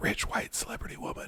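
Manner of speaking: barely audible, hushed whisper. Daring to say a touchy phrase aloud after hesitating: whispering. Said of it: "I just whispered it".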